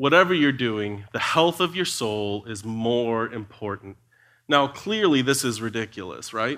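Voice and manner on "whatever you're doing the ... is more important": very slow, deliberate delivery, each word drawn out. Retelling advice he was given about the health of his soul; very slow. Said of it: "He said it real slow".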